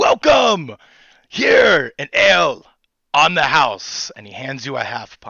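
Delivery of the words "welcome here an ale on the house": loud shouted welcome, higher pitch. Voicing a half elf greeting a player in a tavern: hollering. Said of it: "by a half elf who hollers".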